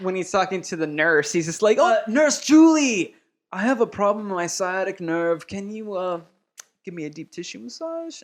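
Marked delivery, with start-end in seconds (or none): 1.8-8.2 clumsy, bad put-on German accent. Retelling a film character asking a nurse for a massage: imitating a bad German accent. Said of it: "this guy's accent is so bad".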